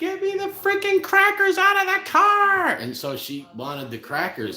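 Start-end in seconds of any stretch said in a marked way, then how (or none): 0.0-2.7 shrill, very high, loud screaming. Retelling a partner screaming across loud music for crackers: imitating her screaming. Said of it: "she's screaming".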